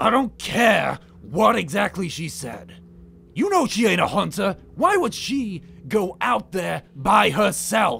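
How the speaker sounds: very loud, high-pitched fantasy orc voice. Narrating a game scene, voicing the orc who speaks up: orc voice. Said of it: "you hear the orc say".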